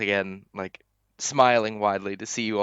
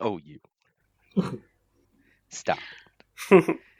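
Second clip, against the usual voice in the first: coy, bashful, flattered tone, lively pitch. A game master's character, complimented by a player, answers; flattered, bashful reply. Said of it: "kind of does a blush and smile".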